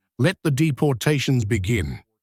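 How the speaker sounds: usual speaking voice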